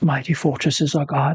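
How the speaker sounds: hushed whisper. Storyteller voicing a slashed, semi-delirious man, whispering. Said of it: "And he just kind of like whispering that".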